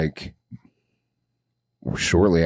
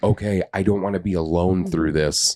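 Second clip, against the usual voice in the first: ordinary delivery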